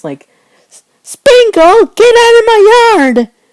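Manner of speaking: very high, loud little squeaking voice. Planning character voices, the speaker tries Squirt in a little high-pitched voice. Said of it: "a little high pitched voice".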